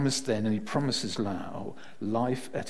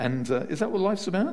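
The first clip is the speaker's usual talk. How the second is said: ordinary talk, nothing marked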